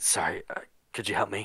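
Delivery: wounded, pain-laced, groaning voice. Voicing a wounded man who groans in pain asking for help: in pain. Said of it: "groans in pain".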